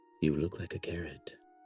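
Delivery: very soft, gentle, hushed whisper. Voicing a creature speaking softly over a character's shoulder: soft whispering voice. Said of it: "in that nice, soft, whispering-like touch".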